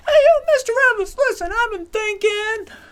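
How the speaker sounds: very high-pitched voice. Retelling a student's question in class: imitating Jamie's high-pitched voice. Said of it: "going high-pitched with his voice whenever he asked questions".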